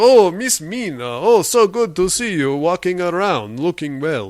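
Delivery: classic movie-vampire manner. Retelling a movie scene, voicing Count Dracula: imitating Count Dracula. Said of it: "And he's like".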